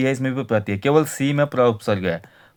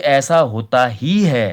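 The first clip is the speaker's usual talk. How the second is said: ही hit hard and forceful. Hindi grammar lesson on emphatic particles, strong stress on ही. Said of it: "ही जोर लगा के बोल रहा हूं".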